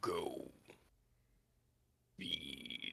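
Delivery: very quiet demonic growl, under the breath. Storyteller voicing a growl behind characters fleeing through the city, Baphomet's growling voice. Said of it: "you hear again Baphomet's growling voice".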